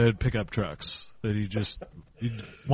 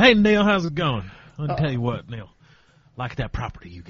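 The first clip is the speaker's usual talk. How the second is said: put-on fast, chummy, folksy down-home good old boy voice; 2 semitones higher than usual. Showing how to phone the listing agent, in a good old boy voice. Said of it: "Act like a good old boy".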